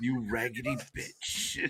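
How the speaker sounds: mock contemptuous, scornful tone delivered fully dead serious. Retelling what a wrestler said with such contempt: imitating a contemptuous insult. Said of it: "he said it with such contempt".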